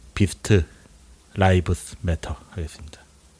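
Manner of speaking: British English pronunciation. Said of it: "영국식 발음으로 한 거예요".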